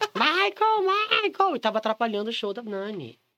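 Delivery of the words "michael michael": put-on higher-pitched drunken shouting. Retelling a drunken night at a drag show: retelling a drunken shout. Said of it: "fiquei gritando "Gogoboy"".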